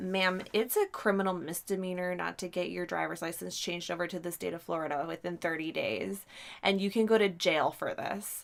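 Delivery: ordinary delivery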